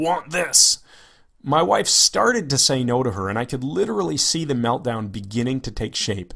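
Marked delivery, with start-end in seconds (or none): 0.0-0.8 put-on high, simple, primitive cave-child voice. Narrating a story where she points and asks, in her cave child voice. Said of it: "said in her cave child voice".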